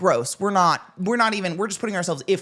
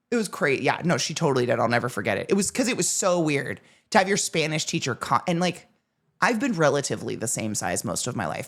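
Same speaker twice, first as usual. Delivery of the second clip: normal talking voice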